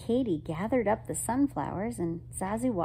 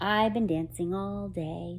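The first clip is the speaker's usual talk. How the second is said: plain reading voice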